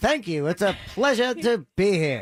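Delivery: put-on mid-Atlantic accent. Describing someone so excited to be there: Andrew McClay's mid-Atlantic accent. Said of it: "He has an authentic mid-Atlantic accent".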